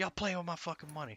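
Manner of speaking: mock pissed-off tone. Retelling what a furious caller said on the phone: imitating a pissed-off caller. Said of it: "she was so pissed off".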